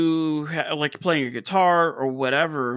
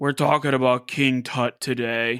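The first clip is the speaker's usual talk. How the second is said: put-on grown-man voice, lower; 3 semitones lower than usual. Describing how the other speaker sounded on slowed audio, imitating a grown man's voice. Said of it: "you sounded like like a straight up growing man".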